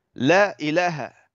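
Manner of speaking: ordinary delivery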